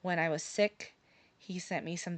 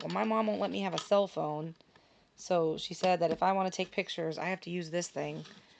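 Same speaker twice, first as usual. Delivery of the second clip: plain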